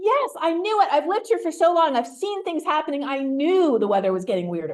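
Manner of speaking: excitement building, excited rising outburst. Retelling a stranger's reply about the weather, imitating excited speech. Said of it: "he got more and more excited".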